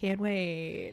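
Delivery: put-on sarcastic tone. Retelling a scene where Sirius hears about chores: imitating Sirius being sarcastic. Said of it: "is Sirius that good at being sarcastic".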